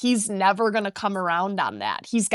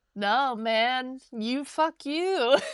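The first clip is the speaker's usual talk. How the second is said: very slow, level, unbothered, super calm delivery; 4 semitones higher than usual. Imagining two people arguing while both stay calm: imitating a super calm argument. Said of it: "super calm".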